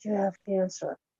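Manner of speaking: mock menacing whisper. Retelling what an evil presence said: imitating an evil whisper.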